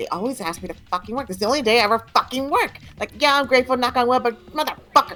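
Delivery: high, animated kids' cartoon-character voice. Retelling what a man said at a mall Santa event, in the SpongeBob voice. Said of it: "and then the SpongeBob voice, he was like".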